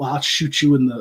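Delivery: put-on smooth, suave Southern drawl. Quoting a movie villain's line: imitating a suave southern accent. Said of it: "that very kind of suave Southern accent".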